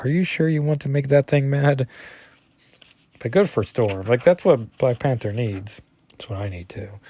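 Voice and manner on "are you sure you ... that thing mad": put-on whisper, higher pitch. Retelling a comic scene, voicing Kitty: whispering as Kitty. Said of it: "Kitty whispers".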